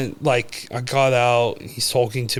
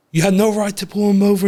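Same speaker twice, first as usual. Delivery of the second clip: mock full-on, loud, high-pitched yelling, all out; 8 semitones higher, 6 dB louder than usual. Retelling how a brother yelled at a cop: imitating someone yelling. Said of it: "He's full yelling at the cop".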